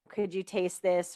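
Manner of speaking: usual speaking voice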